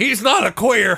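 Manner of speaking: slow, high, loud, drawn-out shouted yell. Retelling what Jack yelled in the bar: imitating someone yelling.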